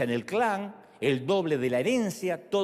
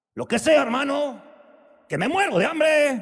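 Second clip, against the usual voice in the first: put-on high, loud street slang accent; 9 semitones higher, 6 dB louder than usual.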